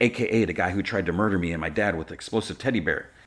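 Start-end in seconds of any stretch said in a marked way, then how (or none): none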